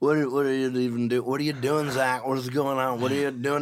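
put-on sloppy, stumbling, confused drunk voice. Retelling how Shane, hammered drunk, grabbed his arm: imitating drunk Shane. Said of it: "He's hammered drunk".

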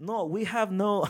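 very high, loud put-on broken-English Russian accent. Retelling poor English replies from clubs, imitating a Russian accent. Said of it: "I don't know why they have a Russian accent".

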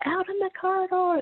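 put-on shrill, very high, top-of-the-lungs yell. Retelling how he answered her offer to step out, retelling a shout. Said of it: "top of his lungs".

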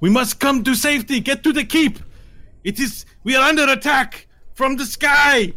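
very high, frightened, panicked yelling. Voicing tieflings as rocks rain from the sky: panicked shouting. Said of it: "tieflings all around you are panicking".

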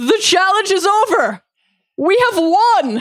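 triumphant shout, very high pitch. Imagining Tywin after his tribe wins a challenge: imitating Tywin shouting. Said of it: "him just shouting".

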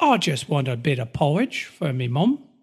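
terrible, bad fake English accent. Acting out Dickens characters in Victorian England, bad fake English accent. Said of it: "survived our terrible English accents".

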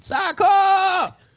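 very high, loud shouted yell. Retelling how someone at the park called for a kid: imitating someone yelling a name. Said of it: "somebody's yelling and they".

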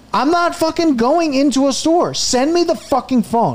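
furious ranting, yelled high in pitch. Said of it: "And I'm losing my mind".

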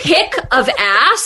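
rattled, shaken, stunned voice full of disbelief. Retelling the dad's reaction at dinner: imitating a shaken dad. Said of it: "And he was so shaken".

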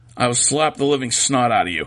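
ordinary talk, nothing marked

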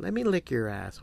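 play-acted coy, bashful tone. Retelling what a woman said to him in bed: imitating someone shy and coy. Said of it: "she was like shyly one day, just kind of coy".

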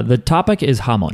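ordinary delivery

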